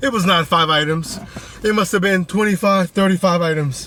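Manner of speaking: talking while winded and catching breath. Speaker tells viewers about a huge grocery order, out of breath. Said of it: "let me catch my breath".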